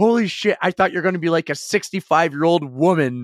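flustered, panicked disbelief.

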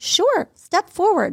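high, cool, calm, logical voice.

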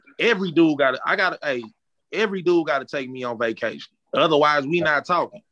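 ordinary talk

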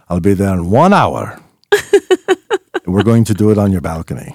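loud, animated announcer voice. Retelling what the minister friend said on the phone, imitating the minister friend's voice. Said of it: "I'll just say in his voice".

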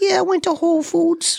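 high-pitched mock Jersey girl accent. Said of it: "I expect her to be like".

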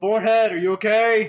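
very high calling-out shout. Narrating a man kicking at a door and calling to someone: yelling. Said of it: "He's also like yelling like".

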